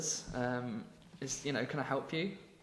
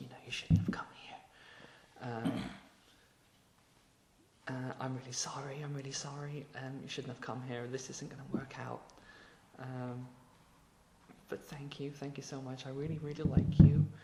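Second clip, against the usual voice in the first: put-on hushed, quiet tones. Retelling a film scene where she warns him off: imitating hushed tones. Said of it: "And then in hushed tones".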